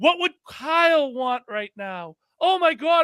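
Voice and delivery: fake sobbing. Mocking grown adult players grieving a fallen teammate, mock crying. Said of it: "they're crying like the man just died".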